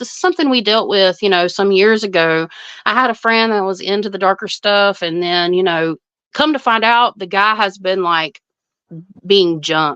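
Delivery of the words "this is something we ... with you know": plain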